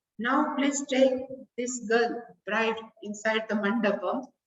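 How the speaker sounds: normal talking voice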